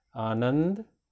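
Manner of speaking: Anand with emphasis on middle syllable नं. Hindi lesson on word stress: stress on middle syllable of Anand. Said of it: "जोर देने वाला हमारा बीच में है".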